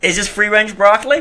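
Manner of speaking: stuffed-up plugged-nose voice. Doing an impression of Chris in a blocked-nose voice. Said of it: "with the plugged up nose?".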